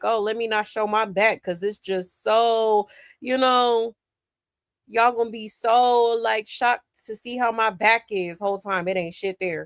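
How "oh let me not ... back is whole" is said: ordinary talk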